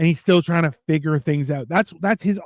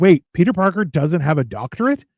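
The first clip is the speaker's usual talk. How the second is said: normal talking voice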